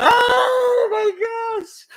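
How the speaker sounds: high shriek of disbelief.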